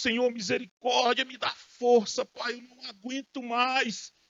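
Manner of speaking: weeping, tearful, pleading outcry. Retelling a person crying alone in their room: imitating someone crying out to God. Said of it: "sozinho ali clamando a Deus".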